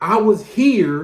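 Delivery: plain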